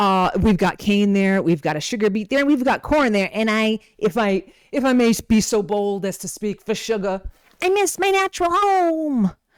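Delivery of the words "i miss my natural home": very high put-on southern drawl, "home" drawn out. Speaking for sugar while going through foods: southern accent as sugar. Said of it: "I think sugar should have a southern accent".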